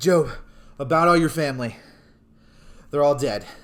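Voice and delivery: loud, out-of-breath voice. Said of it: "Breathing heavy again".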